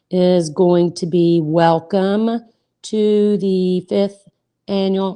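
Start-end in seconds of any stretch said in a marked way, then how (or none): 1.4-5.1 slow, careful, deliberate delivery. Reading out an email subject line: speaking slowly. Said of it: "I had to talk slow".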